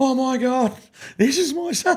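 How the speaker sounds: put-on crying voice. Retelling what mum said in the stands: imitating mum crying. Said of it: "my mum was crying, going".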